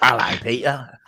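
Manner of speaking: poor put-on Cockney villain accent.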